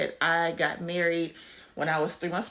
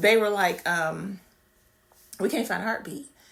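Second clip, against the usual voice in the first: choked-up, fighting back tears, holding it together. Recounting the hospital visit where they couldn't find a heartbeat, holding back tears. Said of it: "I'm not going to cry".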